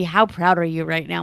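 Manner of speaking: imitated whisper. Retelling a remark whispered to them in the kitchen: retelling a whisper. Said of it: "Ted just whispers to me".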